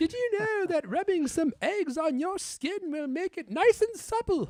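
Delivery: put-on British accent, pitched very high. Playing Missus D and talking to another character, in a put-on British accent. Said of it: "What a wonderful British accent Missus D has".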